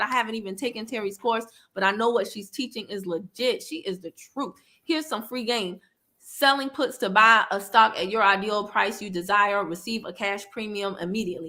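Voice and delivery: ordinary talk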